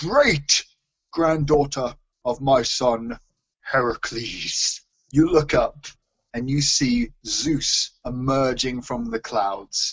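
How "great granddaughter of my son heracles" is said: grand, powerful god voice. Telling a story, Zeus addresses the mortal hero, in a powerful booming voice. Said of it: "Now I have to do a powerful, booming voice".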